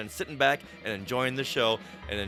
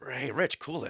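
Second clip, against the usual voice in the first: muttered under the breath. Showing another speaker how to say a line: under the breath. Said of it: "under your breath".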